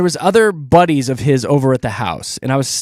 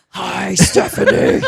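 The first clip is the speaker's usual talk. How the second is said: silly, rough, creaky put-on monster voice; 3 semitones higher than usual. Greeting callers by name for a joke: put-on monster voice. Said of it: "monster voice just makes you sound silly".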